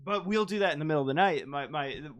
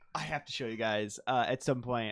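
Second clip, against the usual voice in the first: usual speaking voice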